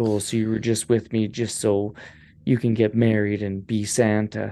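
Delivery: ordinary delivery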